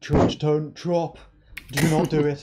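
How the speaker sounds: high, shouted half-scream. Recapping a game, a player re-enacts screaming at a teammate not to drop. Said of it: "I was kind of screaming".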